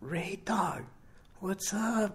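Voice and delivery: very high, soft, slow, barely above a whisper. Lying there, he greets his nervous visitor softly, just above a whisper. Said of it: "Little Rooster's voice is soft, just above a whisper".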